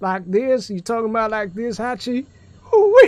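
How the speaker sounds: fake Southern US accent, loud and high. A streamer shows a viewer which accent they mean, in a put-on southern accent. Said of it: "With with the with the southern accent?".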